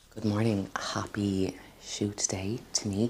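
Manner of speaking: hushed whisper. Greeting viewers early in the morning while someone sleeps: whispering. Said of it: "I'm whispering because".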